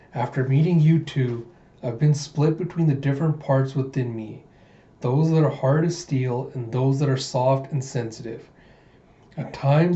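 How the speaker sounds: usual speaking voice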